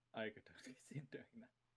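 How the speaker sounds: fast, soft whisper.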